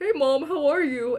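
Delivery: playful voice talking like a dog. Recalling a Skype call, pretending the dog is talking to mom, talking like a dog. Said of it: "pretending to talk like a dog".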